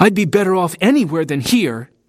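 sharp, high-pitched snapping tone. Louis, leaving home as his mother begs him to stay, snapped. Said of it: "he snapped".

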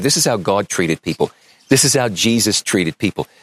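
ordinary talk

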